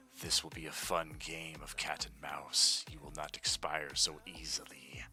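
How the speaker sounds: whispering in a character voice. Voicing the Balor looking down at a character who regains consciousness: whispering as the Balor. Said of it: "whispers in Abyssal".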